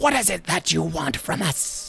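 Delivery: rough, creaky, many voices speaking in unison. Narrator voicing a giant mass of mouths, in a multitude of voices at once. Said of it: "in a multitude of voices just states".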